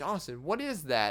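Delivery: normal talking voice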